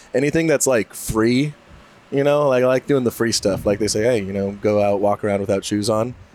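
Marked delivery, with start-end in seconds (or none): none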